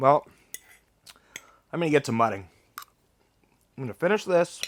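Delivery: speaking with mouth full of food, chewing. Eating by a campfire, the speaker signs off to viewers, talking with mouth full. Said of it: "Talk with food in my mouth".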